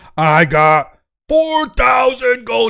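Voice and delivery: high, gleeful screaming in a giant voice. Narrating a giant who just got four thousand gold, giant screaming. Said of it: "He starts screaming in giantish".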